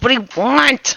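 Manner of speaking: angry irritated tone. Voicing a character who glares and stomps back out to ask: angry glaring demand. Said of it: "he glares and then stomps back out and says".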